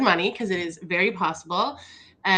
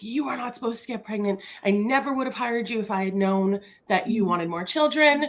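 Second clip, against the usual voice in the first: put-on scream, kept mild; 3 semitones higher than usual. Retelling how the boss reacted to the pregnancy news: imitating boss screaming. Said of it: "she literally screamed at me and was like".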